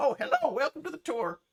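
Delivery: very high, loud nineteenth-century prospector voice. Voicing a character who welcomes someone to the tour: nineteenth-century prospector voice. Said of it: "I think your vocoder is set to uh, nineteenth century prospect".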